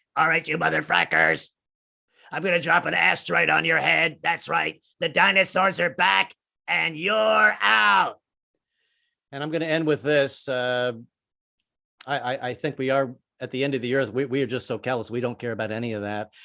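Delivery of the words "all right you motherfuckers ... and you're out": rough, creaky, rasping, strained voice. Voicing a pissed-off Mother Earth, like talking through a hole in the neck. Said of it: "talk through a hole through her neck".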